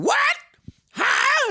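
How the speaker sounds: very high, loud, brash, careless loudmouth squawk. Retelling a woman in a theater: imitating someone talking really loud. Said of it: "talking really loud".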